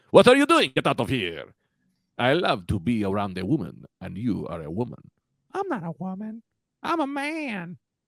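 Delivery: put-on laid-on creepy, sing-song Italian accent with swooping pitch. Doing a bit on their podcast in a creepy Italian Iron Man voice. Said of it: "That's his voice".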